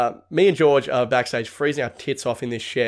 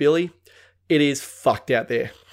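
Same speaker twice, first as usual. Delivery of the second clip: usual speaking voice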